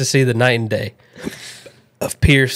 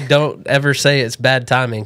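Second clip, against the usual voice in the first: plain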